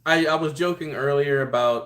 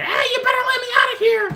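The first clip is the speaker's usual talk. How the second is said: mock, very high-pitched, loud shrill yell; 5 dB louder than usual. Picturing a toy that yells from a fish tank: imitating Mark Hamill screaming. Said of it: "Mark Hamill's voice saying".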